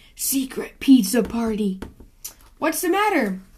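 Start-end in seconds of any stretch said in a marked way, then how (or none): 0.2-1.8 whispering, lower. Reading a story aloud, the raccoon repeats the cheer with lights off: whisper. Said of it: "whisper just to be safe".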